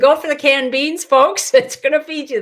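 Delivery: loud, high-pitched, urgent shouting. Recalling everyone buying toilet paper during the disease, advising folks: screaming. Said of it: "I'm screaming".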